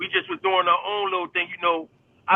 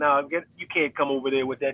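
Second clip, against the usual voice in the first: mock laughing while talking, lower; 4 semitones lower than usual. Retelling a friend's reply to a lead pipe: imitating someone laughing while talking.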